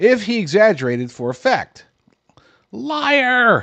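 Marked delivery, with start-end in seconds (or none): 2.7-3.6 very high, long-held, drawn-out screech. Imitating the press screaming at an exaggeration: The Princess Bride "Liar!" scream. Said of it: "best impersonation from The Princess Bride".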